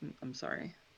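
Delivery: quiet, hushed tone. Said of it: "very quietly just, uh, say".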